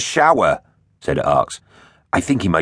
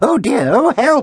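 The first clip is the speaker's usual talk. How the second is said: shrill, very high-pitched squealing; 4 dB louder than usual. A scientist emerging from a smoky lab after a blast, squealing. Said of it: "he squealed".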